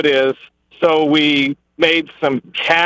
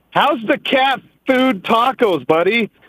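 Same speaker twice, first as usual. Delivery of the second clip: mock yell, high-pitched and slow; 7 semitones higher than usual. Telling a story, the speaker retells his bodybuilder buddy yelling to a man eating tacos. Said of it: "he just yells out".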